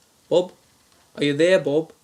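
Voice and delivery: put-on Australian accent. Calling a man at three in the morning, the caller uses a put-on australian accent. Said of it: "same Australian accent".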